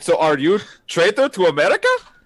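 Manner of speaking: put-on Russian accent, very high and loud. Joking about spy contacts, playing a caller; fake russian accent. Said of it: "I have a Russian accent".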